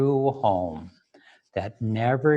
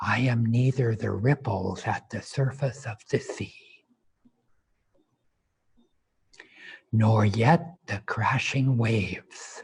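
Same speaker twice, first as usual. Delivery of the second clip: soft whispered speech. Leading listeners in a repeat-after-me affirmation, in a whisper. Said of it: "repeat this now in a whisper".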